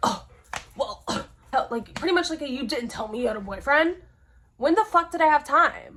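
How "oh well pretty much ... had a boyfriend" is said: angry, indignant, accusing man's voice. Quoting the man who got mad on learning she had a boyfriend: mock-angry retort. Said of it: "got super fucking mad".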